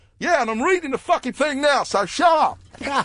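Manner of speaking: piercing high-pitched yell. Retelling how someone shouted back at a comedian, retelling a shout from the crowd. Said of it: "someone like shouted out".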